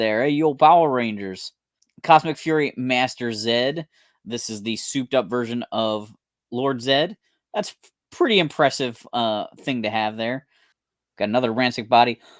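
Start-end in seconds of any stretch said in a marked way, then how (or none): 0.2-1.5 put-on light Brooklyn accent, robot sidekick voice. Describing the Alpha Six robot from Power Rangers, imitating Alpha Six Brooklyn accent. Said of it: "talked like he had the Brooklyn accent".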